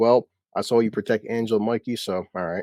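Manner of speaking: ordinary talk, nothing marked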